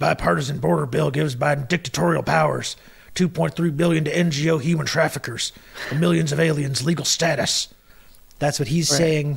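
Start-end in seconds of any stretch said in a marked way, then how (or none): 0.0-7.7 rough, scratchy, gritty, creaky put-on voice. Quoting what someone says, the speaker does it in Alex Jones voice. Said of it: "I'll do it in his voice".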